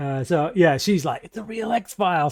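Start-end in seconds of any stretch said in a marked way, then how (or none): 1.2-2.3 mock thrilled, excited fangirl voice, geeking out. Retelling a scene and imitating Layla geeking out: imitating excited Layla. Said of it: "So she's all excited, geeking out".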